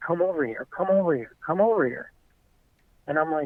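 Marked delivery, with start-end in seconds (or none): 0.0-2.1 mock frantic, urgent tone. Retelling how a man at a campsite waved him over, imitating frantic urging. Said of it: "frantically waving at me, like".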